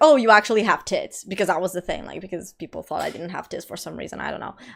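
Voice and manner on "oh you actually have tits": put-on speech broken up by laughter. Retelling what a guy said after grabbing a dress: imitating someone laughing while talking. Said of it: "laughing, is like".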